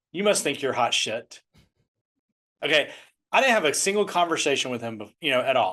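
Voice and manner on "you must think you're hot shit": put-on muttering under breath. Retelling what a young person at the gate said: imitating someone muttering under breath. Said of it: "he goes under his breath".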